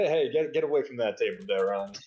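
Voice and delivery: derisive, teasing, jeering tone. Recounting a character shooing another away from a table, retelling a mocking jab. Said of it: "he like mocking".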